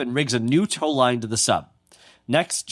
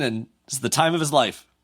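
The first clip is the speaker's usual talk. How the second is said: ordinary delivery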